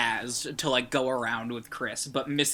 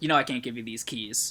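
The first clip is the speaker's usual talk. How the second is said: plain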